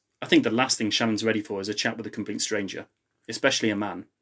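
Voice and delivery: ordinary talk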